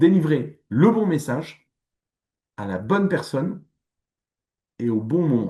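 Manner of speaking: slow, weighty, deliberate delivery, pausing mid-phrase. Marketing talk, repeating an important phrase, spoken slowly. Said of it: "Je le dis lentement parce que c'est une, une phrase importante".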